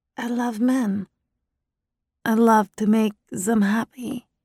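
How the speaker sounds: come-hither breathy sex-kitten voice with put-on accent. Asked in an interview why she wants the job, she answers in a breathy sex-kitten voice. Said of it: "I used my best breathy sex kitten voice, hinged with my fake accent".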